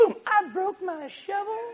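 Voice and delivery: put-on very high little kid voice. Asking families to bring kid shovels, the speaker voices a child: little kid voice. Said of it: "That's my little kid voice".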